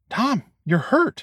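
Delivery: hushed whisper. Brandy, pointing to Dom's injured arm, speaks to him: whispering. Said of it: "whispered Brandy".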